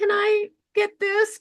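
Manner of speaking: timid, meek, mealy-mouthed mousy voice, very high pitched. A guest explaining she became a powerful voice, demonstrating a mealy mouse voice. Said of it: "not a mealy mouse voice".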